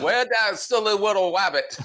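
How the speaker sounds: put-on high, laughing cartoon character voice.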